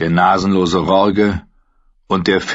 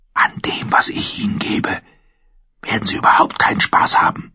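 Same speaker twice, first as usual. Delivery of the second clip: stubborn, defiant whisper. Told to hand the meat over, the girl answers him in a defiant whisper. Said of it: "erwiderte sie trotzig im Flüsterton".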